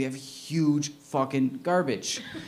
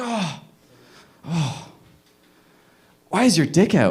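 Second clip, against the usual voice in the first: mock confused, out-of-it, slow, dazed voice; 4 dB louder than usual. Retelling what a man hit with a bat said: imitating a dazed, confused man. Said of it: "dazed and confused".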